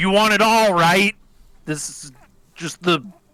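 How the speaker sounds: high shouting. During a game, a player speaks as their character, yelling at Banks. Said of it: "I'm like yelling at Banks".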